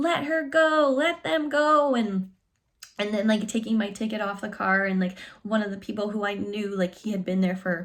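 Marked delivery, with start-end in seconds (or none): 0.0-1.9 mock, very slow, stretched-out, loud cheering shout. Recalling people she had just met that day, retelling them cheering. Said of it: "they were like cheering".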